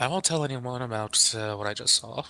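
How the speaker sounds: quiet, soft half-whispered voice. Voicing a character walking out the door past another: half-whispering. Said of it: "he'll whisper".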